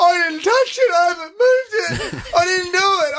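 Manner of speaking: acted sobbing hysterics, high, tears in the voice. Retelling what he said when asked to help find the charger, imitating hysterical crying. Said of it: "I'm talking like hysterical, like tears coming out of his eyes".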